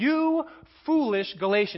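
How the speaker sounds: put-on stern fatherly scolding. Speaker quoting Paul's rebuke to the Galatians in that tone: fatherly scolding. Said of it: "It's with that tone of voice that he says".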